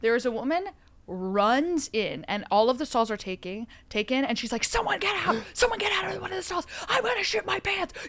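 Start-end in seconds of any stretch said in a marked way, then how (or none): 4.6-7.9 put-on woman's scream, much higher. Retelling a woman who ran into a bathroom with every stall taken, imitating her screaming. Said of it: "Like literally screaming".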